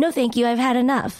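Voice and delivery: ordinary delivery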